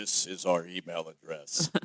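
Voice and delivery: radio announcer style delivery. Podcast host re-records the show's email address to edit in: announcer voice. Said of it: "I'll use my announcer voice".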